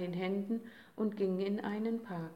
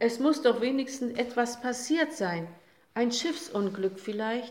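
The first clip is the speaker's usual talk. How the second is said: loud, upset, angry, indignant insistence; 3 semitones higher, 6 dB louder than usual. A father reacts as everyone laughs at his little son, exclaiming angrily. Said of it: "rief sein Vater aufgebracht".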